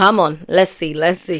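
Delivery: plain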